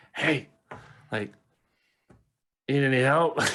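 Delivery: kind of whispering. Calling out to a guy who got knocked over, offering help, kind of whispering. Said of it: "I'm gonna kind of whisper it".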